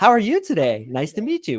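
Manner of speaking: rising pitch at phrase ends on today and you. Coaching men on tone of voice, showing a supplicating greeting: rising intonation at the end. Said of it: "Their tonality goes up at the end".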